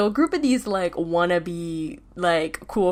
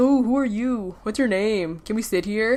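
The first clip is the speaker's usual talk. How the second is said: patronising, condescending, fake-nice, fake-friendly chatter; 3 semitones higher than usual. Imitating annoying strangers who ask to sit nearby: mock-condescending. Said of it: "they say this like sort of condescendingly".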